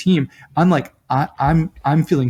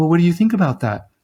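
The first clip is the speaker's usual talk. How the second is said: put-on girlish voice; 3 semitones higher than usual. Acting out asking someone a question, in a girl's voice. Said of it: "I'm doing a girl's voice here".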